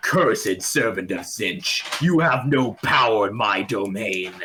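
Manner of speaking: grand, declaiming voice. Game master voicing the Lord of Change before the pit, booming Lord of Change voice. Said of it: "the booming voice as it projects its voice".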